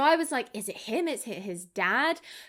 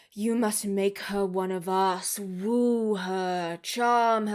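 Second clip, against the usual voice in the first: deep, slow, dark demonic voice, woo stretched. Describing a show, voicing the father's voiceover: deep booming satanic voice. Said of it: "this like deep, booming, satanic voice where he's like".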